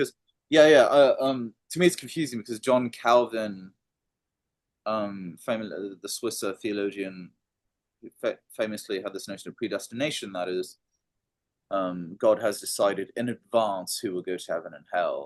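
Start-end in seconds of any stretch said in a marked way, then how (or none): 0.0-3.7 loud, high enthusiasm. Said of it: "you sound very, uh, enthusiastic".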